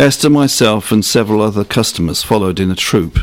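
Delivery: ordinary delivery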